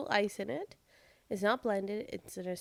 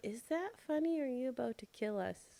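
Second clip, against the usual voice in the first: dead straight, no-joke put-on axe murderer voice; 2 semitones higher, 5 dB quieter than usual. Imitating a partner who once had no inflection: deadpan axe murderer voice. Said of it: "deadpan, like, axe murderer voice".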